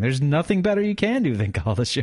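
corrected intonation, can stressed and pushed up widely.

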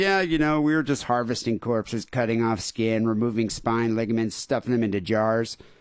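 plain

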